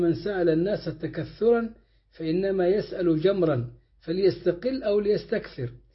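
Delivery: ordinary talk, nothing marked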